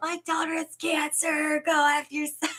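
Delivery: high, very slow, deliberate, drawn-out yell. Retelling being yelled at in the car: imitating someone yelling. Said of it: "and she just yelled".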